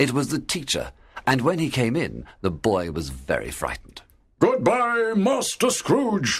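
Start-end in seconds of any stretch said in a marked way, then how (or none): 4.4-6.4 dreadful, terrible, frightening voice, pitched very high. The teacher says goodbye to the frightened boy, in a terrible voice. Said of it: "said the teacher in his terrible voice".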